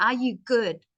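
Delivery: strong stress pushed onto the word "good". Teaching sentence stress, the question said with stress on "good". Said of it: "So I need to push my voice there".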